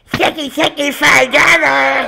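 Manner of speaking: put-on whiny cartoon child, high. Closing out, the speaker suggests a line in the other's South Park voice: Cartman voice. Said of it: "In your South Park voice".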